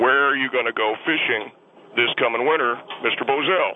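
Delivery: normal talking voice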